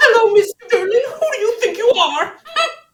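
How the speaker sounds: very high-pitched puppet character voice. Retelling a puppeteer performing a line in character: Miss Piggy voice. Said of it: "performs it, like, as Miss Piggy".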